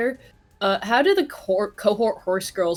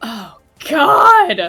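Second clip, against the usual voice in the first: very loud, high yelp with a cracking voice; 7 semitones higher, 10 dB louder than usual. Exclaiming aloud with the voice cracking badly. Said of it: "My voice cracked so bad".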